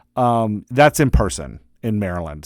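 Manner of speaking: usual speaking voice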